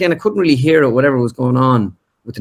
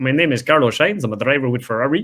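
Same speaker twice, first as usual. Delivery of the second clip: high-pitched put-on voice from back of throat; 3 dB quieter than usual. Retelling an early try at the voice in front of his wife: Carlos Sainz impression. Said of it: "when I was doing him".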